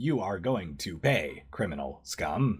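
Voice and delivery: robotic, robot-like voice. In a game, the narrator voices a slammed-down robot answering a player: robot voice. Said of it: "The robot looks up at you and he says".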